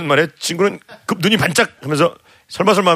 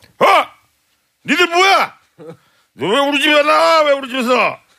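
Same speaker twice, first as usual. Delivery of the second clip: mock drunk man voice, much higher pitch; 10 semitones higher than usual. Telling a story, voicing a drunk bald man at a friend's door: imitating a drunk man. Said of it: "술이 떡이 되어있더래요".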